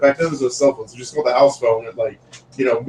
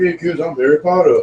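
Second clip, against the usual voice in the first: high-pitched puppet-show voice; 5 semitones higher than usual. Retelling a camp puppet show: imitating the Harry Potter puppet. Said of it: "this Harry Potter puppet comes up, and, uh, he's like".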